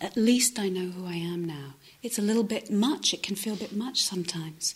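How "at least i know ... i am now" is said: usual speaking voice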